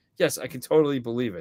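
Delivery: ordinary talk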